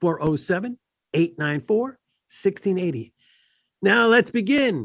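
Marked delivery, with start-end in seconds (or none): 0.0-3.1 slow, unhurried delivery. Radio talk show host repeating the call-in phone number, said slowly. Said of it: "I'm going to say that slow".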